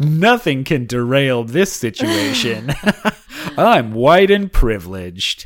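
smug, self-satisfied, untouchable host voice. Voicing Chris Harrison's thoughts as he strolls in: smug Chris Harrison voice. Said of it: "Looking like a smug motherfucker who has no idea".

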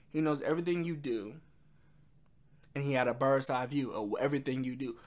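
ordinary delivery

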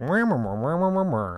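muffled, droning wah-wah teacher voice. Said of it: "he has, like, Charlie Brown teacher voice".

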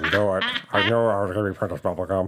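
put-on American accent, mumbling. Joking about Doctor Strange, imitating Benedict Cumberbatch doing an American accent. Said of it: "Benedict Cumberbatch doing an American accent?".

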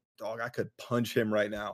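plain

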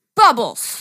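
furious, loud, angry one-word outburst. Egged on to say a word aloud, angry 'bubbles'. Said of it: "I was angry".

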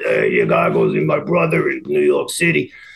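rough, creaky, swooping put-on character voice. Retelling how a store visitor was told where to go: imitating his voice. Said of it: "in his voice like this".

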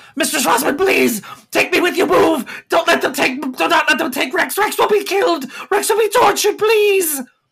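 very high, panicked, pleading scream. Voicing a character who is dragged off for punishment: screaming plea. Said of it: "and he screams".

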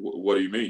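put-on deep voice. Retelling how Paul Shirley answered a question about the snow, imitating Paul Shirley's deep voice. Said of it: "Paul got a deep voice".

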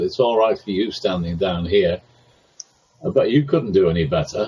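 ordinary talk, nothing marked

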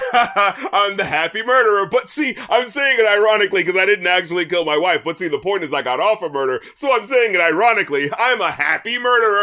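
smug, self-satisfied gloating put-on voice. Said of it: "O J took out a camcorder and is like".

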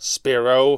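overpowering, commanding tone. Answering a man who just barked at her, she says his name, tone dwarfing his bluster. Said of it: "she said in a tone that dwarfed his bluster".

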